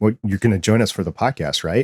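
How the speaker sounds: ordinary delivery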